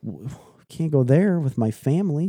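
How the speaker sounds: high, frightened, stuttering little deer voice. Acting out a baby deer blocked by a no-trespass sign: imitating a scared deer. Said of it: "And they're like".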